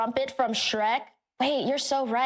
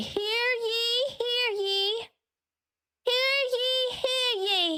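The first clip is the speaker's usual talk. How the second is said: put-on little village boy voice, high, very slow, "ye" stretched; 9 semitones higher than usual. Recording voice-pack lines, announcing like a town crier: little village boy voice. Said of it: "I wanna sound like a little village boy".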